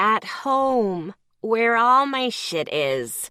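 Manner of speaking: goofy, silly, mocking sarcastic voice. Answering the other character's question, in a silly sarcastic voice. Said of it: "I pointed out sarcastically in a silly voice".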